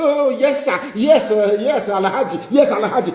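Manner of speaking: mock groveling beggar voice, high and fawning.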